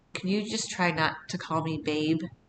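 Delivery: really quiet, hushed voice. Retelling what the oldest said at parents' weekend: imitating someone speaking quietly. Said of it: "really quietly".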